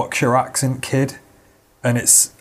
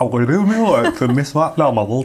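put-on gummy, toothless little boy, broad Yorkshire accent; 2 semitones higher than usual. Describing a video of a child telling a story: toothless little kid voice. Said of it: "I feel like he's got no teeth. He's like".

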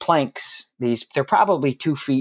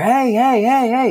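put-on very high, loud, drawn-out yelled "hey"; 11 semitones higher, 5 dB louder than usual. Recounting two men with clipboards calling out to the speaker, retelling someone yelling hey. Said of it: "yelling at me".

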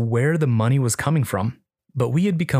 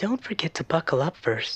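overly seductive, sexualized robotic whisper; 5 semitones higher, 6 dB quieter than usual. Through the car stereo, Amy answers the exhausted narrator: Amy's overly sexualized robotic whisper. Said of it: "whispered back an overly sexualized robotic voice".

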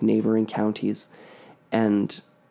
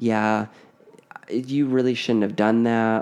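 usual speaking voice

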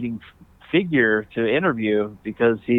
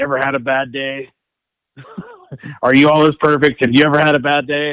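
mock irritated, annoyed tone; 2 semitones higher, 4 dB louder than usual. Retelling a coach's retort to a defense question: imitating an annoyed glare. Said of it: "kinda looked at me and glared and said".

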